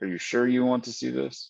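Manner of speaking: plain-voiced, cautious, just talking. Narrating a scene as a man asks the listener a question: very quiet voice. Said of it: "in a real quiet voice".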